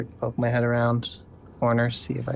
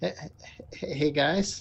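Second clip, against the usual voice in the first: careful, really soft, hushed, quiet call; 4 semitones higher, 4 dB quieter than usual. Calling to the party in character so a snake won't wake: speaking real softly. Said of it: "real softly".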